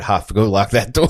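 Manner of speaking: frightened, scared tone. Retelling telling a coworker to lock the door: imitating own scared order. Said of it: "Just so scared that the man will come in".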